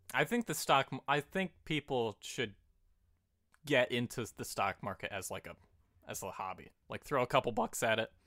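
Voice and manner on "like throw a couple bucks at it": voice cracking, much faster. Talking about investing in stocks as a hobby, voice cracking. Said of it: "my voice cracked".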